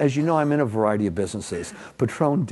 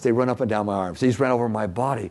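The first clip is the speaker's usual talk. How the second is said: usual speaking voice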